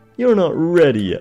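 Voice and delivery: shrill, shouted shriek, high and loud, done badly. Speaker recalls a line from Brawl, in a terrible Pit impression. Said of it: "He says it like that. That was a terrible impression".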